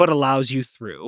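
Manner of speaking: ordinary delivery, nothing marked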